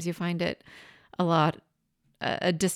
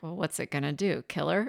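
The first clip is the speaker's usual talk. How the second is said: muttered under the breath, quieter; 3 dB quieter than usual. Retelling what they said after catching their nephew's eye, said under the breath. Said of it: "just said under my breath".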